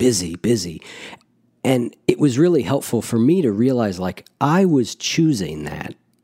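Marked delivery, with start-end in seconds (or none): 0.0-0.8 proud yet weary tone, half pride, half tiredness. Recalling how they used to say they were busy: acting proud and weary. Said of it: "with this sort of combination of, I guess, a little bit of pride and a little bit of like weariness".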